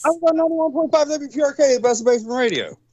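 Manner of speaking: rattled off at breakneck speed, slightly high-pitched. Asked what kind of radio show he had, the guest answers, talking very fast. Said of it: "you said that title of that so fast".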